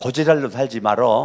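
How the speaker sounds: Chungcheong regional dialect. Leading the audience in a blunt greeting to their neighbour, in Chungcheong dialect. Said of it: "충청도 사투리예요".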